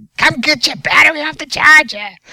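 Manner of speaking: put-on very high, very loud, shrill old lady voice. Joking about obnoxious charger beeps, the speaker voices a charger alert; old lady voice. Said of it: "Get an old lady's voice".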